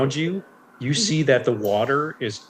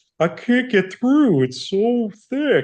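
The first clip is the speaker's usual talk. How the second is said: very slow, very high-pitched turtle creature drawl; 10 semitones higher, 3 dB louder than usual. Voicing a struggling turtle that stops and looks up: voicing the turtle. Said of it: "he looks up at you, uh, Tic Tac, and he goes".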